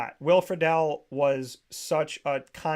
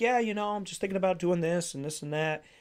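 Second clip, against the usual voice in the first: put-on calm, quiet, reserved voice; 2 semitones higher than usual. Recalling a show host talking off the air, imitating his calm, quiet voice. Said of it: "really calm, quiet, reserved".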